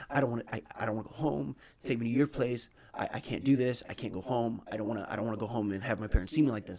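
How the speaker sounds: mock panicky pleading voice. Retelling a panic attack while riding with an ex: retelling own panic attack. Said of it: "I start having a panic attack".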